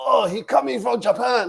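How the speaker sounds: put-on very high, broken-English Japanese accent. Retelling how a friend reacted to a restaurant name: imitating a friend's mock japanese accent. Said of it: "automatically starts talking like this".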